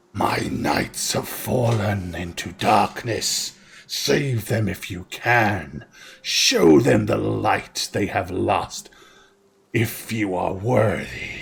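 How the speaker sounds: serpentine, hissing dragon voice through the words. A game master voices a fiery dragon addressing the players, hissing dragon voice. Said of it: "the fiery dragon hisses".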